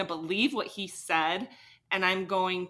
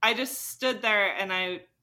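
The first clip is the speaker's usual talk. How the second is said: ordinary talk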